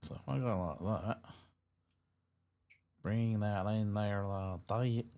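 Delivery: casual American accent, slipped into. Explaining a video setup to viewers abroad, slipping into an american accent. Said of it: "Why am I talking with an American accent?".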